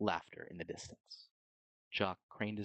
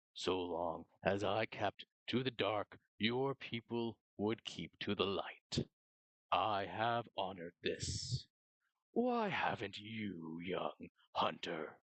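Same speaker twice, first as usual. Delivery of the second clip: low, rough voice like grinding stone. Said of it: "the [name]'s voice moved around [name], / low and rough, stone grinding on stone".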